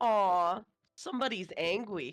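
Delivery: taunting, teasing, mocking fake sympathy. A player voicing their character reacting to an angry character; pouting, mocking. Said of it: "does a pout and goes".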